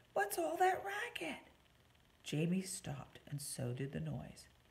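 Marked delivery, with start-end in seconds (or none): 0.2-1.5 whispering, much higher. Narrator reads Claudia asking Jamie about the noise, whispering. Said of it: "she whispered".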